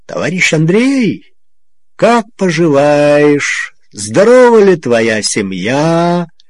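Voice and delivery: mocking, sneering, taunting. Former political officer Major Mansur greets Andrey, mocking. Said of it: "скалил белые зубы в издевательской улыбке".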